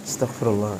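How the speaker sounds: hushed, quiet, soft voice. Showing how to say astagfirullah so others don't hear: quiet and soft. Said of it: "Jangan gede-gede makanya ngomong, pelan-pelan".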